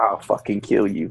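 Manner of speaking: put-on cold chilling tone. Retelling how a man delivers a threat to someone, mock-cold threat. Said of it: "he says that so cold".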